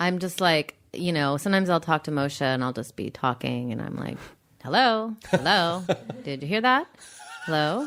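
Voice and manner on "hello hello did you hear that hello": put-on vintage 1930s old-movie voice, called out. Retelling talking to a partner who isn't listening: 1930s voice. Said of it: "in that nineteen thirties voice".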